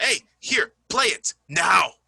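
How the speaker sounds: pushy, forceful, slow. Explaining how a phrase sounds, acting out forcing someone: mock forceful demand. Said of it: "Like trying to force someone".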